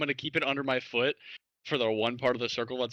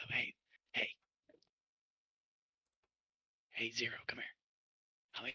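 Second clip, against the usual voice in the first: whispering, much quieter; 11 dB quieter than usual. Character in cuffs whispering to a companion, planning to break the circle. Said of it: "I'm gonna whisper over it".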